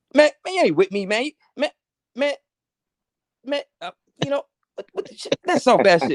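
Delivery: very high, animated, swooping put-on voice, ranting. Acting out a scene, doing an impression of A B: impression of A B. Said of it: "I fucked up the impression".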